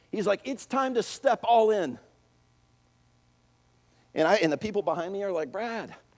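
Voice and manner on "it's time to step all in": yelling, higher pitch and louder. Retelling what the instructor yelled out in front of everybody: retelling a yell. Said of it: "He yells it out".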